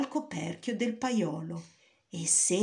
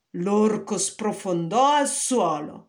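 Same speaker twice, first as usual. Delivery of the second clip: ordinary delivery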